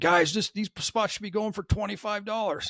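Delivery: mock furious, angry, high-pitched screaming. Retelling how an angry show runner yells at the break: imitating a screaming breaker.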